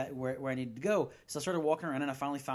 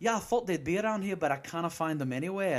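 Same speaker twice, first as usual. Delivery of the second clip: casual put-on Scottish accent; 3 semitones higher, 4 dB louder than usual. Retelling a conversation with a woman, using a put-on scottish accent. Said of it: "I just came out in with a Scottish accent".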